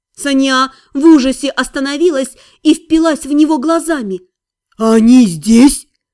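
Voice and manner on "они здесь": sudden, low exclaiming tone. Siri reacts to Hэрин's news of a raid, exclaiming. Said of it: "воскликнул Сири".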